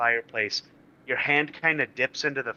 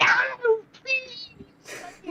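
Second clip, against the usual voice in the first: very high, drawn-out, pleading panicked shriek. Game master voices a character a player is pushing in: screaming. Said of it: "he starts screaming like".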